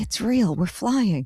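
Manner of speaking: high stage whisper full of wonder. Telling about her on the Peter Pan ride: imitating her half-whisper. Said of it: "I kept hearing her whispering".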